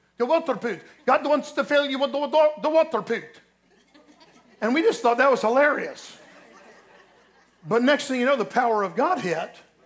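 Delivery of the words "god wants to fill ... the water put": slight put-on Swedish accent, higher and much slower. Quoting a funny man they knew, in a put-on little Swedish accent. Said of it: "he had a little Swedish accent".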